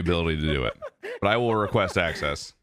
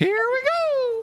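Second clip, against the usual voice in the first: very high, squeaky cartoon voice. Gamer back on Discord with friends, starting play in a Mickey Mouse and Mario mix voice. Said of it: "You kind of sound like a mix, of like Mickey Mouse and Mario".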